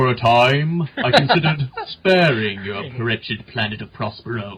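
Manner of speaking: super deep narrator voice. Answering a question about deploying the vehicle, speaking like Orson Welles: Orson Welles voice. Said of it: "we have to talk like Orson Welles".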